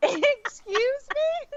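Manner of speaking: very high, slow, disbelieving, incredulous excuse me. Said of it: "And I'm like".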